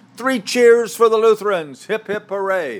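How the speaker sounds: very high, shrill, loud top-of-lungs yell. Telling a joke, the acolyte calls out from the altar railing, retelling a loud yell. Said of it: "in his loudest voice yelled".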